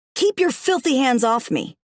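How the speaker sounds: snarling voice. Reading a story aloud, the narrator orders the monkey off: snarling. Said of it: "I snarled".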